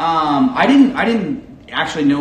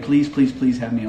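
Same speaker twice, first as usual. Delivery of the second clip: ordinary delivery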